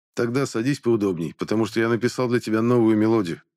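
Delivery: ordinary delivery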